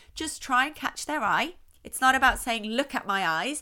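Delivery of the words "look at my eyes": plain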